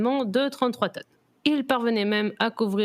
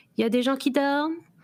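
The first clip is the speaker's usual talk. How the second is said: mock-innocent tone, higher pitch; 3 semitones higher than usual. Retelling what someone coming home late asked, mock-innocent voice. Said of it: "d'une voix innocente".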